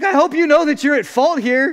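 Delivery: loud, accusing yell. Retelling what a guy yelled after backing his truck into the car: imitating a man yelling. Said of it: "he starts yelling at me".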